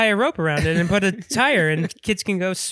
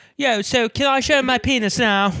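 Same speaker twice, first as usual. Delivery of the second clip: put-on, played-up, fake British accent; 4 semitones higher than usual. Imitate an actor from the movies asking what he can do, in a fake British accent. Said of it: "doing a fake British accent of him".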